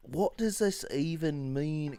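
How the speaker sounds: clumsy, bad put-on Australian accent. Imagining how a man who follows them on Twitter would react, put-on Australian accent. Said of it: "I can never just jump straight into an Australian accent".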